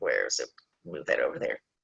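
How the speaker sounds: very soft, very low, quiet muttering. Speaker trying to move something during her talk, mumbling to herself. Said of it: "I'm mumbling to myself".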